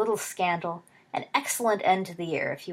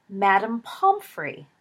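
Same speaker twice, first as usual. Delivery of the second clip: sudden, loud exclamation, several voices crying out together; 2 semitones higher, 5 dB louder than usual. Two listeners slap their foreheads as it dawns on them, crying out. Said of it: "cried in unison".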